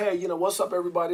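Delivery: mimicked mellow delivery. Imitating a mellow performer greeting everyone: imitating a nonchalant greeting. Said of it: "raw nonchalant".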